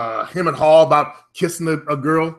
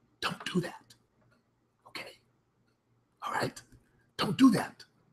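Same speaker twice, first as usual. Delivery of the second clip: hushed, very quiet, joking whisper; 4 semitones higher, 14 dB quieter than usual. Jokingly lowering the voice so the cat downstairs won't hear: joking whisper. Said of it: "Then I gotta whisper this".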